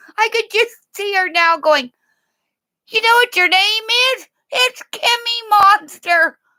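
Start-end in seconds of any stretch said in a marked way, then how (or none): 2.9-6.3 high, goat-like bleating voice. Picturing a woman talking to a baby, the speaker does her in a goat-like voice. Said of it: "Do I sound like a goat?".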